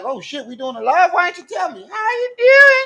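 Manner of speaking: very high, swooping, squeaky little voice. Joking that a pimple on someone's forehead speaks: voicing a talking pimple. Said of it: "That pimple popped out on him like".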